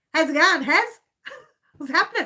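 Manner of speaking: trying out Australian accent. Calling someone and trying to use the accent: attempted Australian accent. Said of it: "I'll see if I can do it".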